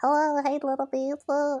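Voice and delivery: silly, funny put-on voice, high and slow. Recalling the voice old friends used to talk in, in a funny put-on voice. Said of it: "talking in the funny voice we used to talk in".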